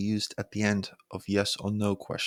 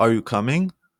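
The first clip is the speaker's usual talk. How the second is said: rising, question-like tune at the end on coming; 7 dB louder than usual. Turning the sentence into a question: rising pitch at the end on coming. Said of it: "Your voice rises at the end, making it a question".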